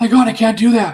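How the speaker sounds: loud frightened exclamation.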